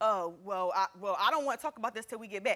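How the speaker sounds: mock reply dripping with disgust, put-off. Retelling a partner's reply to pregnancy news: imitating a disgusted reply. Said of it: "with the most disgusted face and was like".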